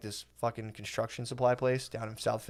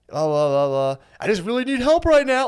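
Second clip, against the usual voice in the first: very high, rising, frightened, pleading voice; 9 semitones higher, 8 dB louder than usual. Retelling how someone phoned his dad for help, imitating a scared voice. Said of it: "like a scared voice".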